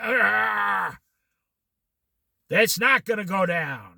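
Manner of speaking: low devil voice, drawling, long drawn-out "ah". Mimicking people asked when the stock market will go down, mock devil voice. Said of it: "they start sounding like the devil".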